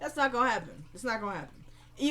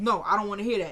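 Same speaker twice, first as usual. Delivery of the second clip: ordinary delivery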